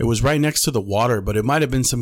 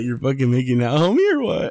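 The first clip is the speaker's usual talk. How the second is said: crazed, jittery, wired, spastic, swooping voice; 2 semitones higher than usual. Retelling what a guy high on ice said: imitating someone acting crazy and spastic. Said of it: "getting all crazy and spastic".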